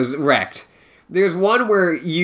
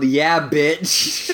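ordinary delivery

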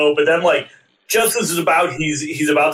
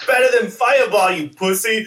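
play-acted thrilled, excited, jeering, pitched up; 6 semitones higher than usual. Retelling a movie scene line by line: imitating Kano excitedly. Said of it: "'cause he's so excited".

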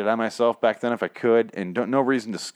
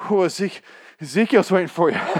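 faked breathlessness, much higher and slower; 9 semitones higher, 4 dB louder than usual. Redoing a line someone said to them, now pretending to be out of breath. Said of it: "I forgot to be out of breath".

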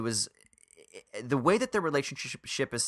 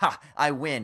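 ordinary talk

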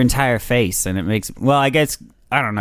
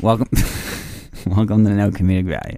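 flat, deflated, unenthusiastic delivery, lower pitch; 3 semitones lower than usual. Introducing the podcast again after being interrupted: unenthusiastic introduction. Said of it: "a very unenthusiastic introduction there".

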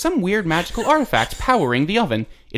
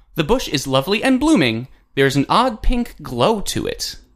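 put-on game computer narrator voice. Playing the computer in a spoken text adventure game, text adventure computer voice. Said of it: "I am a computer now".

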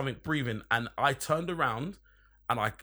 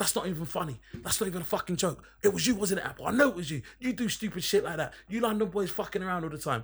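mock unhinged, high, frantic, losing-it rant; 5 semitones higher than usual. Retelling how a man on watch accused him, imitating someone losing it. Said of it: "he kind of lost it".

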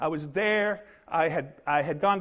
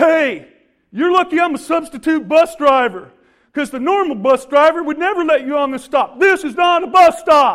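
put-on gruff, very loud, high bark, older-sounding voice; 8 semitones higher, 14 dB louder than usual. Retelling what a bus driver said when boarding: imitating a gruff bus driver. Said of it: "Gruff goes".

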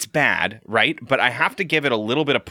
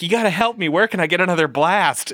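acted, panicky, desperate begging, high and rushed; 6 semitones higher than usual. Retelling Doyle's words before his hockey match: imitating Doyle panicking. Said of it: "Doyle is standing there panicking".

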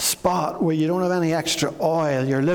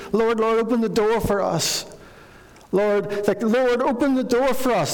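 mock panicked, frantic, desperate pleading; 5 semitones higher than usual. Retelling the parable, voicing the women shut outside the gate; imitating desperate shouting. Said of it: "they're shouting in desperation".

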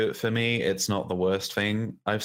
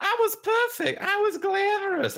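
shrill, very high, snippy, snapping mocking tone. Complaining about a woman always asking why she didn't win, snapping mocking impression. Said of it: "just snapping and going".

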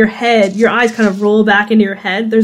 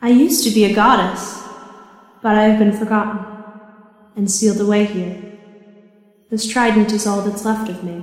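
maternal elf woman voice, quieter; 4 dB quieter than usual. Voicing a forgotten goddess answering a player: voicing the goddess Trishna. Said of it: "I am called Trishna".

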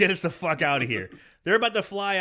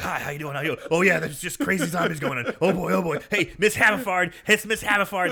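wound-up, sweaty-sounding, overexcited, hyper, wired babble. Retelling a movie scene, imitating a wound-up, coked-up prime minister. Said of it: "looks like he's done, like, three eight balls of coke".

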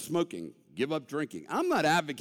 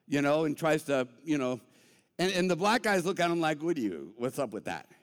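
normal talking voice

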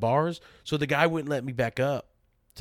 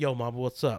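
put-on smooth flirty tone, quieter; 2 semitones lower, 5 dB quieter than usual. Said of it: "I'm talking to her like I would never talk to".

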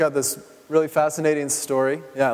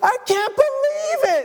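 play-acted thrilled, very high, drawn-out shout. Retelling a five-year-old grabbing a gift box: imitating an excited yell. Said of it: "jumps and yells with excitement".

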